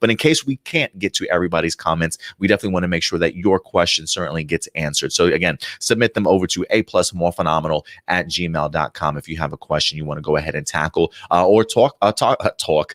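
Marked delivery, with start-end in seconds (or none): 11.5-12.9 "talk" said with a New York vowel. A host asking listeners to email in questions, New York accent slipping out. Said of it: "my New York accent coming out".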